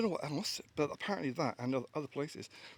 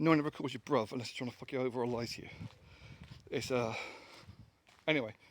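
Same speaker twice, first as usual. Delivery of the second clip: normal talking voice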